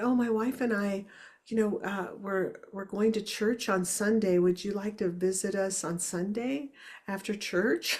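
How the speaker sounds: put-on soft sweet grandfatherly voice. Retelling a phone call, quoting the man who invited the speaker: imitating soft sweet voice. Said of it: "He had a very soft and sweet voice and said".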